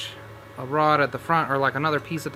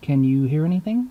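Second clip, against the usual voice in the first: hushed, almost whispering voice; 2 semitones higher, 5 dB louder than usual. Testing a device, the speaker asks viewers if they can hear; almost whispering. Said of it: "kind of almost whispering".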